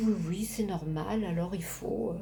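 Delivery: soft, small, little mock voice.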